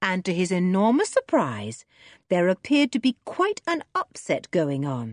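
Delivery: plain reading voice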